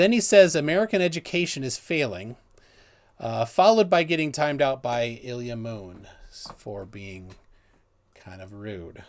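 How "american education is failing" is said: usual speaking voice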